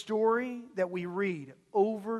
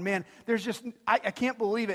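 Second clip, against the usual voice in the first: ordinary talk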